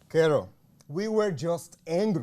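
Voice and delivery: very big, loud voice. Repeating the line to carol, told to go ten times bigger: ten times bigger and louder. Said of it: "See if you can go ten X that".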